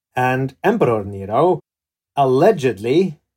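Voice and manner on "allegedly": allegedly stressed hard and set off by pauses. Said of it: "I emphasize that word".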